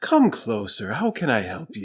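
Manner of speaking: kind, welcoming, very friendly and inviting voice. Recalling a king character greeting visitors: imitating King Moonracer's friendly voice. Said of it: "He's got this very friendly".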